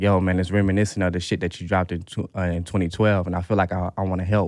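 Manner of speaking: ordinary talk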